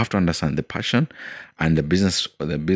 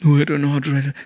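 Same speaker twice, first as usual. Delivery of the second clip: put-on crying child voice, higher and louder; 10 semitones higher, 5 dB louder than usual. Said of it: "he's crying".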